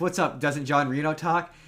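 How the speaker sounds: usual speaking voice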